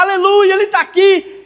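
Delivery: mock fervent crying-out, high-pitched shouting. Retelling how another sister began shouting: imitating a woman shouting. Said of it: "A outra começou a gritar".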